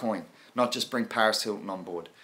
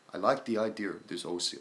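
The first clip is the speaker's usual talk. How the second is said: poor attempt at a voice as deep as possible; 7 dB quieter than usual. Imitating Morgan Freeman pitching a coin: Morgan Freeman voice. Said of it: "I can't even do it".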